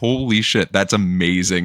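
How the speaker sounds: ordinary talk, nothing marked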